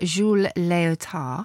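badly done, put-on French accent. Naming the trapeze artist behind the leotard, in a bad fake French accent. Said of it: "I never put on a fake French accent, and that one was particularly bad".

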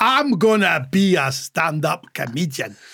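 put-on Scottish-accented voice. Retelling another speaker's decision to do stand-up, scottish accent. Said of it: "you decide in a Scottish accent".

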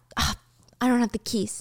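slow, hushed whisper to oneself. Narrating a scene, the storyteller voices a woman whispering to herself. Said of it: "she's whispering to herself".

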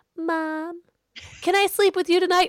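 put-on tiny, very high-pitched little kid voice. Retelling a child creeping downstairs at night: imitating Clara's little voice. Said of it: "I hear a little voice and Clara comes".

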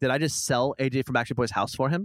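ordinary delivery

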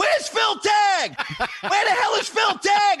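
mock, very high, hollering shout. Retelling someone coming back on stage after the show: imitating Lenny yelling. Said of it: "he starts yelling".

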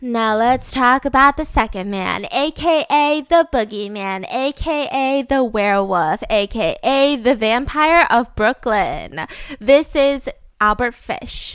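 radio host announcer voice. Moving on to the second man, the speaker introduces him like a radio host. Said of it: "I just sounded like a radio host".

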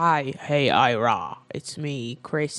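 deep, slow seductive voice. Imitating a phone call from Chris Hemsworth: sexy Chris Hemsworth voice. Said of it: "he has a very sexy voice".

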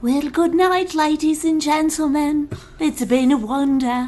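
laid-on put-on English accent. Podcast co-host signing off the podcast, English accent. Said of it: "Do an English accent".

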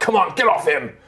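urgent cry, pushed out high. Storyteller voicing Finn hacking at a plant to free a miner, voicing Finn. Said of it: "He's like".

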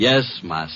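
dry, sarcastic, mocking tone. Answering an employer who has just called his name: sarcastic. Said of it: "Just a little less sarcasm".

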